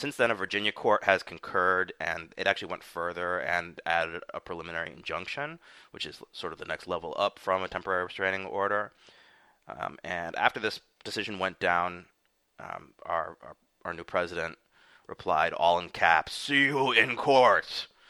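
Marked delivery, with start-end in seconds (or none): 16.3-17.9 high, loud, slow angry put-on monster voice. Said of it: "more like an Incredible Hulk kind of, just angry, angry Trump".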